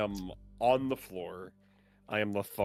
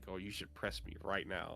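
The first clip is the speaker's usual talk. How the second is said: soft, hushed half-whisper with barely any voice; 2 semitones lower, 9 dB quieter than usual. Describing an on-screen option that pops up, the speaker voices it, half-whispering. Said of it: "it just whispers to me like".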